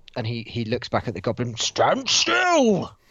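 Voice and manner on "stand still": very high-pitched, booming, loud bellowing voice. Voicing a character shouting down at a goblin: bellowing. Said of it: "as he bellows down at the goblin".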